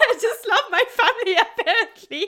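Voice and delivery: very high, loud, tearful voice near tears. Admitting to a conversation partner why she is tearing up: tearful, on the verge of crying. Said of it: "I have actually tears".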